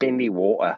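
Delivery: British English accent on "bendy water". Showing how he says a phrase himself: English accent. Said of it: "And I say it in that English".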